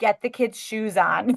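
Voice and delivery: stern, firm, no-nonsense, commanding tone. Explaining Mike's triggers, the speaker acts out her own mock-stern tone. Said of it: "I'll be too stern".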